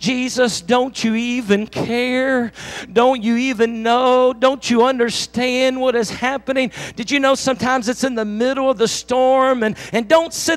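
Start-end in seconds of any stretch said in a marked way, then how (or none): none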